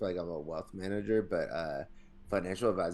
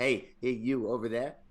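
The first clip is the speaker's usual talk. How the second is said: put-on strong Philadelphia accent. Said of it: "like Johnny Septic".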